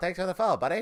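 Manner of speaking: stock cartoonish Canadian accent. Describing a planned weekly stream bit, thanking a follower in a South Park Canadian voice. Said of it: "talk like a typical South Park Canadian".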